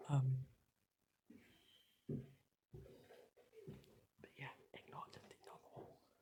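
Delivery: hushed, very quiet voice. Talking while someone sleeps nearby in the bed: speaking really quietly. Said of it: "I've got to be really quiet because April's asleep".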